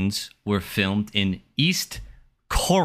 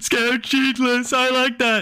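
very high-pitched voice; 3 dB louder than usual. Acting out studio executives reacting to a title pitch, impersonating studio executives. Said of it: "That's my impersonation of studio executives".

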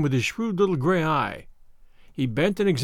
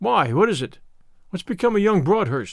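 ordinary delivery

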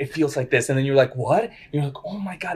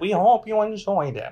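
mock old man voice, higher; 6 semitones higher than usual. Joking about when the episode will come out: put-on old man voice. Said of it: "That's like doing an old man".

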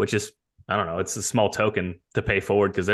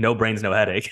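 mock-sarcastic, put-on sarcastic delivery. Quoting a former guest of the show, retelling a sarcastic remark. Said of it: "He said it sarcastically".

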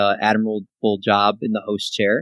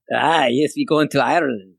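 clumsy, very bad put-on Irish accent; 4 semitones higher than usual. Answering a host's question about his trip, very bad irish accent. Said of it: "very bad accent".

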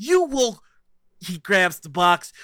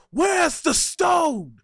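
furious, enraged, pitched-up archangel voice; 6 semitones higher than usual. Narrating the scene, the speaker voices an archangel: enraged archangel voice. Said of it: "Just the enraged voice of an archangel".

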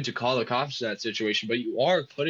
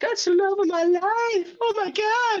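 mock shrill, very high-pitched screaming cry; 4 dB louder than usual. Retelling how a bloodied lady sprinted down the road: imitating someone screaming. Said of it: "Fucking screaming".

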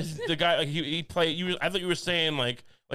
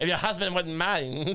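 put-on weird 1920s gangster voice with Lithuanian accent. Repeating a man's invitation to come walk, imitating his weird 1920s gangster accent. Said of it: "He sounds like some kind of 1920s".

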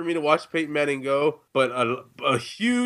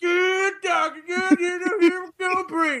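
put-on country voice, higher. Retelling what a hunter said in a video: put-on country voice. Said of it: "You've been in Mississippi for too long".

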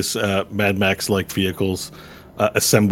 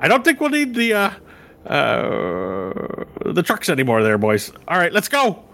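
put-on Irish accent, high and swooping; 8 semitones higher than usual. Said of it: "The Irish now for some reason".

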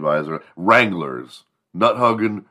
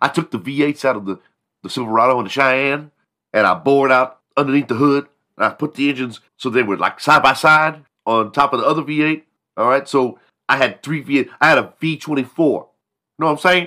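put-on voice, pitched much higher; 8 semitones higher, 3 dB louder than usual.

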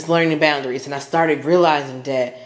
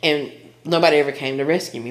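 ordinary delivery

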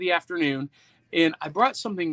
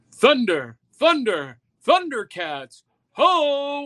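high, swooping call with final ho stretched long; 7 semitones higher, 4 dB louder than usual. Showing another speaker how the cartoon hero Lion-O sounds: Lion-O voice. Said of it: "Now imagine that voice being like".

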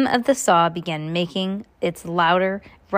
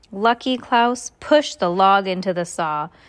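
plain reading voice

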